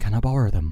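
very loud yet conspiratorial, secretive tone. Retelling how a bully leaned in: imitating him speaking quietly. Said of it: "He leans in quietly and goes".

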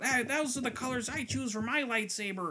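high-pitched nerdy voice. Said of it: "Like your Sal voice".

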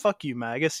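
normal talking voice

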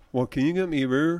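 ordinary talk, nothing marked

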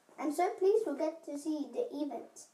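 ordinary delivery

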